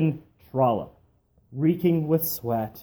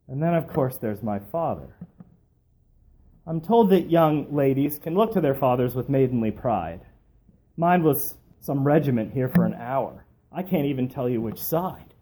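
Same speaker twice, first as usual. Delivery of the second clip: ordinary delivery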